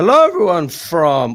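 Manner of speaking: very loud, high voice that cracks. Opening a Chelsea fan channel video, greeting viewers: voice break. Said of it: "that's a bit of a voice break there".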